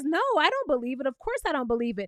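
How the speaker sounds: usual speaking voice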